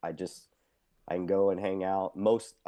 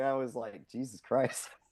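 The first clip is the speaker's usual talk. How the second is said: plain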